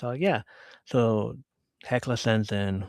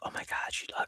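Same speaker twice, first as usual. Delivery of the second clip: imitated whisper, quieter. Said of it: "Donut whispers it and says".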